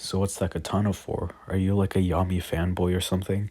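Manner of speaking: usual speaking voice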